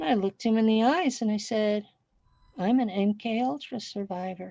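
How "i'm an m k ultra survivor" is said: very quiet, calm, level deadpan delivery. Recounting what they told a man who'd seen them for twenty-five years, retelling a quiet, calm deadpan. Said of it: "Said it very quiet, calm, deadpan".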